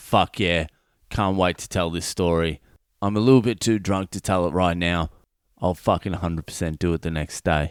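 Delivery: plain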